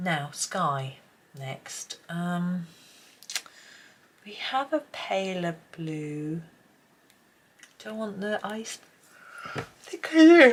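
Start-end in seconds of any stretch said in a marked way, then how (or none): 7.8-10.5 very loud, high words spoken through a yawn. Choosing blues for a sky, yawning while speaking. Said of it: "excuse me, yawning away".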